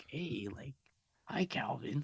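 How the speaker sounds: creepy put-on prank caller voice. Retelling a prank call from Ghostface: Ghostface voice. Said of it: "he does that voice".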